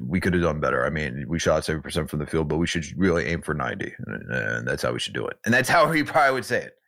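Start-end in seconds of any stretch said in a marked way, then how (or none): 0.0-5.4 put-on matter-of-fact deadpan, low and quiet. Acting out how he would probably respond to a nearly flawless game, imitating Tibbs's deadpan. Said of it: "with the deadpan and all".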